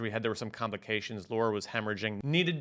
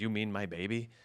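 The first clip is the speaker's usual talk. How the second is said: mock whisper, imitated quiet whispered delivery. Retelling the wife's question at the hospital: imitating a whisper.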